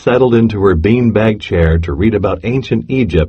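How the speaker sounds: ordinary delivery, nothing marked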